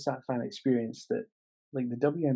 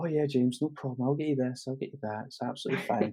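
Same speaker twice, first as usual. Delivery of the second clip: put-on calm tone, faster. Retelling how a woman reassured the speaker before a WNBA game, imitating a calm tone. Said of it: "And she was so calm".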